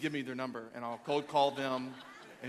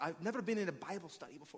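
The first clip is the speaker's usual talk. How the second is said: bad, clumsy, horrible put-on English accent; 4 semitones higher, 5 dB quieter than usual. Quoting a man from overseas who came to church, horrible english accent impression. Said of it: "That's a horrible accent".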